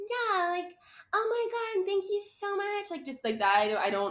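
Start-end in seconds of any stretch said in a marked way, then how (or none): 0.0-2.9 put-on very high, sugary, gushing, overly nice girl voice. Describing how a koala would talk: imitating an overly nice girl. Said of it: "like that girl that's like".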